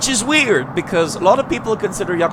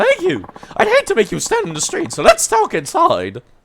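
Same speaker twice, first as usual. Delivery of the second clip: very high, swooping put-on voice; 12 semitones higher, 3 dB louder than usual. Voicing a struggling cabaret club manager asking a stranger for help: put-on nightlife club voice. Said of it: "He doesn't smell like he has a voice like this".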